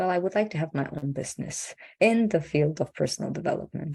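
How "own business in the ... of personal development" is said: ordinary talk, nothing marked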